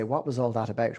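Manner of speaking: plain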